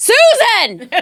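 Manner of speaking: put-on loud, very high old man's shout. Retelling a wedding guest calling across the room: imitating an old man yelling. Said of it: "He starts yelling for Susan".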